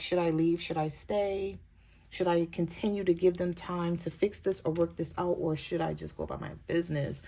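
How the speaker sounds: usual speaking voice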